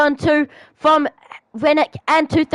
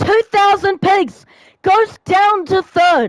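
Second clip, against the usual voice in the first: voice breaking and cracking, breathless; 4 semitones higher than usual. Commentator calling the positions during a race: voice cracking. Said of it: "I'm sorry for the voice crack".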